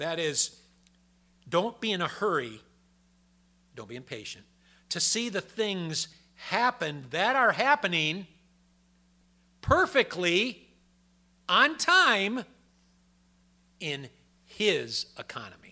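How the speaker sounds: slowed, very loud and high. The speaker repeats a point for the listeners: said a little slower. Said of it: "Let me say it a little slower".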